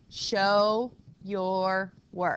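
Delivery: slow, deliberate, unhurried, drawn-out Show. Speaker instructs the class on one-step equations so everyone listens, saying it slowly. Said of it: "I'm saying that so slowly".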